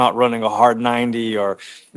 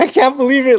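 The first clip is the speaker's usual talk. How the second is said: high, loud, excited joyful yell. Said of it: "just yelling at him".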